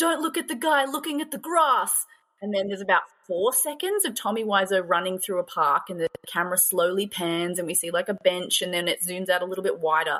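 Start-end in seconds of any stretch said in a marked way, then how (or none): 0.0-1.9 acted-out yell, loud and high-pitched. Retelling what the same audience member yelled during a park scene: imitating someone yelling. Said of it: "the same guy yelled".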